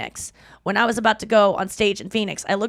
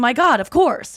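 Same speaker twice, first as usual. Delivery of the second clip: earnest, sincere exclamation, truly meant; 4 semitones higher, 4 dB louder than usual. Describing how an actor answers sincerely: Jeff Goldblum impression. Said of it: "He's just saying".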